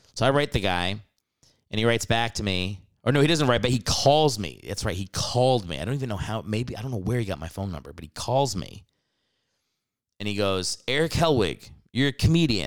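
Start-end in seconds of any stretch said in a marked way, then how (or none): 10.8-12.6 put-on thick Alabama accent, higher pitch. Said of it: "he's got a thick Alabama accent".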